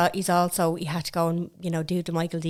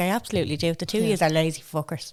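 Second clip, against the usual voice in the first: normal talking voice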